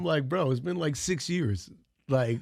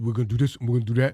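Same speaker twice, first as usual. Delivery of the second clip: loud, raised, projected declaring voice; 4 semitones lower, 5 dB louder than usual. Showing how Sean sounds when doing him: imitating Sean imitating him. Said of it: "he always sounds like this".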